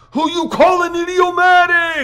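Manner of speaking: very high-pitched, squeaky, mock fury. Reading a story aloud, a character answers a joke: mock fury. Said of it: "Joe declares in mock fury".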